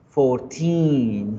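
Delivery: put-on fourteen with stressed, long ee in -teen. Teaching English numbers ending in teen: stress on teen in fourteen. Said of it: "cuando yo hago el énfasis, ... yo alargo la i al finalizar".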